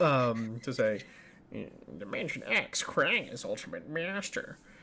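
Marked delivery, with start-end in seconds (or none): 2.0-4.6 put-on, purposely bad cartoon voice. Doing an impression of someone's impression, announcing Dimension X in Krang voice. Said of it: "I'm actually doing an impression of Dan O'Brien doing what is potentially a purposely bad impression of Krang".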